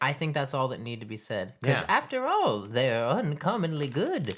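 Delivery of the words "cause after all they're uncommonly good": slow, sing-song commercial tagline delivery. Quoting the slogan printed on the cookie package: Keebler ad slogan voice. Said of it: "which is why I said it in that voice".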